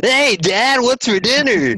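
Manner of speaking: very high, slow, lively voice. Imagining how a son would talk: imitating the lively intro voice. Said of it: "that's how he would end up talking".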